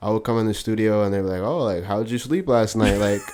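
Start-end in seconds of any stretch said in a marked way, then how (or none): 1.4-3.0 snide, sarcastic, mocking concern. Retelling how people at the studio greeted them: imitating a sarcastic question. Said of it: "sarcastically and shit".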